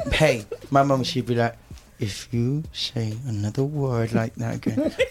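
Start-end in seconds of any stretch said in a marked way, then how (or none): 2.0-4.9 put-on speech through teeth, slower. Recalling how their mum warned them and their brother, imitating mum speaking through teeth. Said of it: "she speak for her teeth like this".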